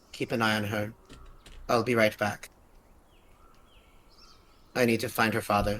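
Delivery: whispering. While another character reads a note, a player character speaks to Galax, whispering. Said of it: "is like whispers like".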